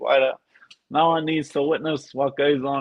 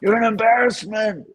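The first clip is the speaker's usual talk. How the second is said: put-on scream, higher; 8 semitones higher than usual. Joining in retelling how everybody screams at a downed fighter: imitating people screaming. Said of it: "everybody's just screaming at 'em".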